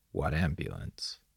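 low, mumbled, muttered under the breath. [name] in the car with Gus, answering Gus's remark, muttered. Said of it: "[name] muttered".

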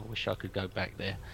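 very quiet, low, hushed mumbling mutter. Saying a few words under the breath, muttering. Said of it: "Say a few words under my breath now".

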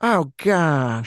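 loud, embarrassed, flustered blurting. Asked to do it again, the speaker repeats a mock-embarrassed Coolidge impression. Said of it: "do it again".

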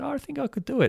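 very high-pitched, playful, joking, boastful delivery. Retelling a reply to someone asking about climbing Everest, retelling a joking reply.

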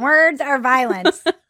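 put-on animated-show kid delivery. Joking with another speaker, repeating the phrase in a South Park voice. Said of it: "I hear it in like a South Park voice".

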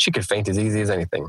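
ordinary delivery

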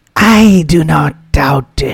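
drawn-out, loud, slow, high purring. She replies to Hsalihba, purring. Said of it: "she purred".

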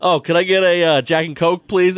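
mock snappy, snapping curt tone. Retelling how a friend ordered from a waitress: imitating someone snapping at a waiter. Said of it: "snapping at this waitress".

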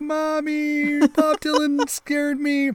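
put-on very high, slow, drawn-out crying kid. Imagining a scared child running back to mommy: imitating a crying kid. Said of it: "I imagine the kid crying and being like".

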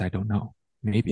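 normal talking voice

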